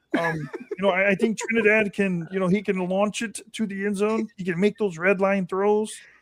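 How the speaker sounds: high-pitched put-on character voice. Imitating a football coach in a Kermit the Frog voice. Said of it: "Your Kermit the Frog is a".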